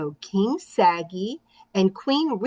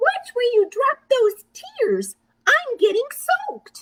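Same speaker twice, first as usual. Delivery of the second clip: very high, tiny, squeaking mouse voice. Narrator reads a tiny mouse speaking up to Cinder Elephant, squeaky small mouse voice. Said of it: "squeaked a small voice".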